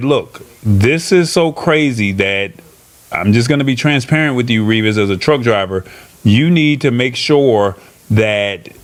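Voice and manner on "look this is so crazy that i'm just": plain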